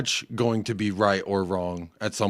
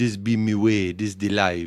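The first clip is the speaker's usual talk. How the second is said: put-on Jamaican accent. Speaker retells what Chet said with his newfound accent; imitating Chet's Jamaican accent. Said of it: "your newfound Jamaican accent".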